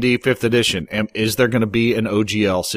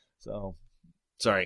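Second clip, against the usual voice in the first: plain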